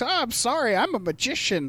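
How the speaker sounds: creepy clown-villain character voice. Retelling a scene where a magician in Joker makeup talks to a child, Joker voice. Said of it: "he's talking like the Joker".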